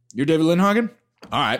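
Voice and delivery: play-acted, understated, dead-straight deadpan delivery. Retelling a movie scene where a character answers a rival: imitating a deadpan line. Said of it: "delivers the most deadpan line in the movie".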